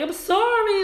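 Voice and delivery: mock sobbing, very high-pitched and tearful. Speaker retells begging him after he broke up with her: imitating crying, begging. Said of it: "crying, begging".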